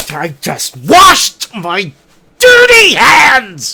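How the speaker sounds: angry, loud delivery with rising pitch. Demonstrating one line read with different emotions, this time angry. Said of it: "I could do it angry".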